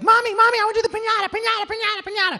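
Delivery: put-on very high, loud, giddy little kid voice. Retelling begging a mother for the piñata: imitating an excited child. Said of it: "I was totally excited".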